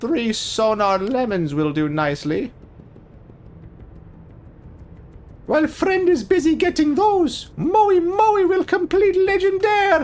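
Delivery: bad put-on cartoon character voice, high and swooping. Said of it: "just trying to do a Hero Pun Ricky voice. That's the closest I think I ever get. It's not good".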